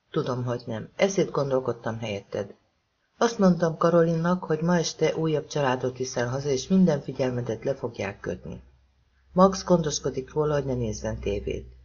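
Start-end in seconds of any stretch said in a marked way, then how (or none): none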